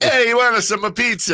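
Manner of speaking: put-on Italian accent. Joking about a New Yorker, offering pizza in a put-on Italian pizza guy accent. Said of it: "did I sound like a authentic Italian pizza guy?".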